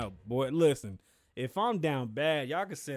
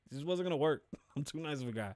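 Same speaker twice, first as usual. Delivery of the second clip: normal talking voice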